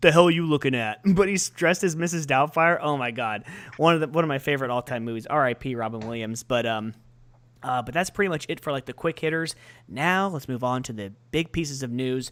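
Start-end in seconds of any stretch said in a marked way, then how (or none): 0.0-1.0 put-on loud, manly man voice. Retelling a movie scene where a disguised man snaps back: imitating his man voice. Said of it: "in his man voice".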